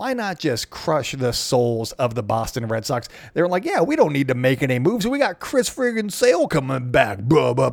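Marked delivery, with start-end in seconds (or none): 3.8-7.7 put-on New York accent. Baseball commentator imitating the Red Sox, in a put-on New York accent. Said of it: "that was more of a New York accent".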